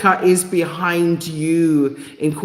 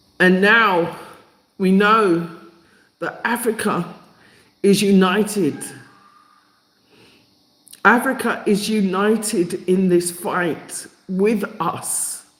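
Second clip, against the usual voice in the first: full of feeling, emotional, deeply moved, overcome; 3 semitones higher than usual. Speaker calling for reparatory justice, apologizing for feeling emotional: emotional. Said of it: "I feel quite emotional about this".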